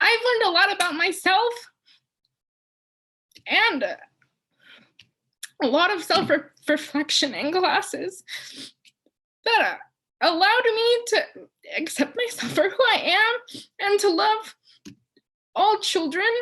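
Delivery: very loud, high, heartfelt emotional outpouring. A student thanks the faculty and professors for their classes, getting emotional. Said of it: "I'm getting emotional".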